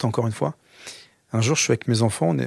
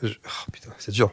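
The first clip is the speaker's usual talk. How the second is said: soft, deeply moved voice breaking. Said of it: "je te sens de nouveau très ému".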